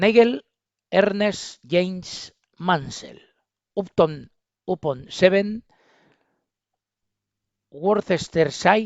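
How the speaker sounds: slow, careful attempted English pronunciation of the names.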